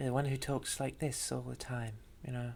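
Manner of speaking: put-on posh lady voice. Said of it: "this sounds a little bit like the, the old lady voice".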